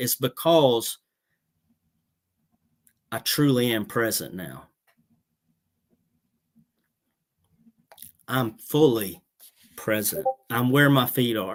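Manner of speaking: slow, choked-up voice catching with emotion. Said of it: "without getting choked up".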